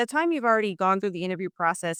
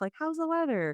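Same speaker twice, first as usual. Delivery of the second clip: high, upbeat, cheery American-sounding voice. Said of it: "this kind of quirky way of starting with the superficial stuff".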